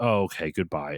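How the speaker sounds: mock depressed, dejected, let-down tone. Imitating a game character after the player leaves: mock depressed voice. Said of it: "goes back to being that depressed person".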